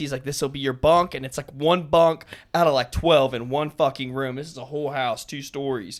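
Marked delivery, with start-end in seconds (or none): 0.2-1.1 put-on thick, heavy Russian or German accent. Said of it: "this thick, like, Russian or German accent".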